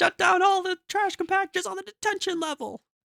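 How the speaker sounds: high-pitched yelling. Imitating Luke yelling an order at C three P O: imitating Luke Skywalker yelling. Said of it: "Luke yelling at C three P O".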